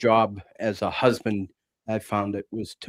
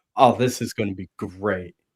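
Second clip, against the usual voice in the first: put-on laughing while talking. Retelling what someone said while dying laughing: imitating someone laughing while talking. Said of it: "he's absolutely dying laughing, going".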